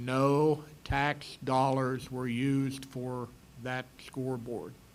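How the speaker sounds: very slow, drawn out, deliberate, each word weighed. Speaker announces to the audience they will say the next part real slow. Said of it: "I'm going to say this real slow".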